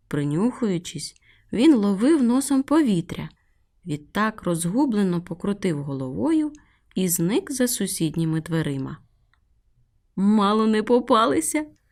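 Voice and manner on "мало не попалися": giggly, amused, said through little giggles. A cat baking cookies just avoided a sniffing dog, giggling. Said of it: "захихотіла Мімі".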